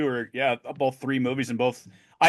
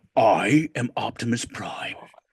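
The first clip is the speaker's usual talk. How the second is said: put-on cartoon robot voice, lower pitch; 3 semitones lower than usual. Retelling the movie scene where the cartoon voice speaks: Optimus Prime voice. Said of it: "it was the dude's voice from the cartoon".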